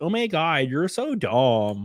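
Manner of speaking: put-on odd L.A. Valley Girl accent. Mocking a political commentator's reaction, in a mock Valley Girl accent. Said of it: "weird L.A., like, Valley Girl accent".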